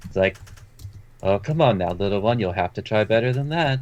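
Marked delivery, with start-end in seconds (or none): 1.2-3.8 lightly mocking, playful, toying teasing tone. Acting out what he says, in the voice he used before: mock-playful teasing. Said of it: "in that exact same voice he was using before, but it seems to have like a more like a playful tone in it".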